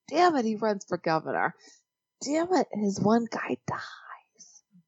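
hushed whisper, muttered under the breath. Talking about show spoilers, keeping it from Bernard: whispering. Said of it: "I'm whispering because I don't want Bernard to hear".

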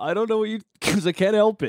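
very high voice, talking through a grin. Asked why they're smiling at the other's pain, answering, smiling while talking. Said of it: "Why are you smiling?".

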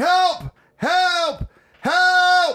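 put-on very high, loud, stretched-out screaming. Recounting trying to scare his dad after a shower, retelling screaming for help. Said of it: "I started screaming".

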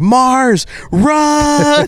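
acted, very high panicked scream, "run" stretched. Telling a story where the moon turns and screams to Mars: mock panicked scream. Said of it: "screams out loud in sheer panic".

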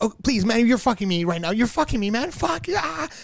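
play-acted high, frantic, desperate, near-breakdown pleading. Retelling a scene with taxi drivers at the airport, retelling a frantic near-breakdown. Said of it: "having like almost not a breakdown".

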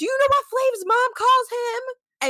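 mock high-pitched, argumentative yelling. Retelling an argument, imitating someone yelling. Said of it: "she starts yelling".

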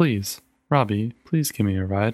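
gently coaxing, soft pleading tone. She pleads with a stubborn companion who keeps shaking his head; gentle coaxing. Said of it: "gentle coaxing".

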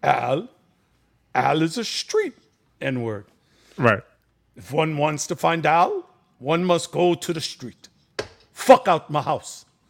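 bad, rough put-on Jamaican accent. Retelling a buddy's father answering the door, in a not-great Jamaican accent. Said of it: "part of my Jamaican accent is not great".

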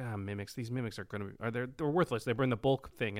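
normal talking voice

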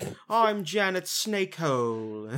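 very slow, high, put-on transatlantic drawl. Describing a Parks and Recreation character, in Janet Snakehole transatlantic accent. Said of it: "she kind of has this, like, transatlantic accent where she's like".

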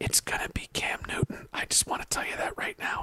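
whispered, hushed, under the breath. Sharing a quarterback prediction as a quiet aside: whispering. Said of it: "I had to whisper".

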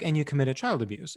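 normal talking voice

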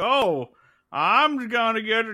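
put-on play-acted, very slow, drawn-out, high drunk voice. Describing a character who walks in, imitating Otis's drunk voice. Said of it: "He does, like, a drunk voice".

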